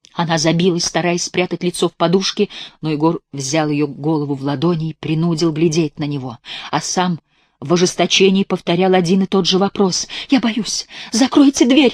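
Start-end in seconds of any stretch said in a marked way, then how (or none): 10.3-12.0 abrupt, sudden, high outcry. A woman in bed, her head held by a man, suddenly cries out. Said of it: "вскрикнула вдруг Санда".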